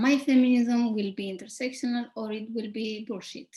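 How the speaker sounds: plain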